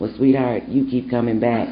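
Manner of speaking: nice, soft, low, gentle, kindly voice. Retelling what a voice told the speaker at Loretta Hospital: nice, soft voice. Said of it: "this nice, soft voice told me".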